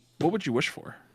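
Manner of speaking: speaking quietly. Asking another player a private question while trying to stay quiet: speaking quietly. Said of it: "I'm saying this quietly".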